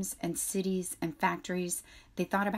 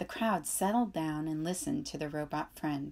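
plain reading voice

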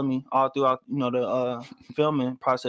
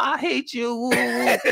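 acted, very high, slow, sloppy drunken slurring; 11 semitones higher, 3 dB louder than usual. Retelling what a drunk woman said after pulling him into a corner, imitating drunk slurred voice. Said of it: "slurred all in her voice".

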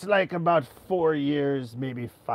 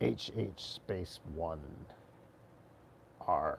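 whispered, hushed put-on pirate accent; 6 semitones lower, 12 dB quieter than usual. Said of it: "just used a Pirate Accent".

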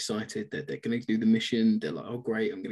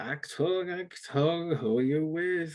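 put-on high, very slow drunk voice; 6 semitones higher than usual. Retelling a film scene where a character acts drunk: imitating drunk acting. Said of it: "some really good drunk acting".

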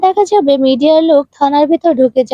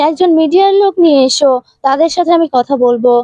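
ordinary delivery

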